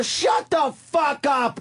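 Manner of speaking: mock slow, drawn-out, high-pitched shouting. Retelling how he yelled back at a truck driver: imitating his own yelling. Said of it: "And I'm yelling, yelling".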